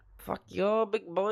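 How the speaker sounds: bad put-on Indian accent. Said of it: "Can I do an Indian accent?".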